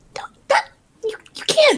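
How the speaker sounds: frantic shout-whisper. Arguing in character with a companion, frantic shout whisper. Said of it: "progressively louder, faster whispering".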